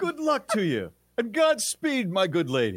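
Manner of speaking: very high, bad old-fashioned movie hero voice. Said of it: "Let me hear it as with my good lady".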